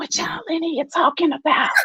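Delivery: hushed, high whisper. Retelling what a woman protecting her voice asked, imitating a whisper. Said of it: "If you got a whisper".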